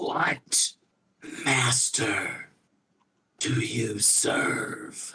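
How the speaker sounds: halting, very dry-throated voice breaking up. Narrator voicing someone who has not spoken in a very long time: very dry-throated voice. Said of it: "a voice of a, a very dry throat. This is someone who has not spoken in a very long time".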